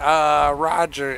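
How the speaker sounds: dumb-sounding, dopey voice. Retelling what they used to say at work: dumb-sounding Sid voice. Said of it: "I'd be like".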